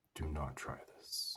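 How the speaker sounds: mock hushed, slow, grave, deeply concerned tone. Retelling what the owner told the speaker, mock-serious, concerned warning. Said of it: "he looked at me so seriously and so concerned".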